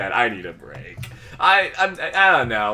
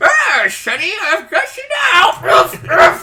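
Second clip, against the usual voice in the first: put-on loud, very high, slow old woman voice; 6 dB louder than usual. Joking about a game character being overtaken by an old woman: imitating an old woman. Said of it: "the old woman went out like".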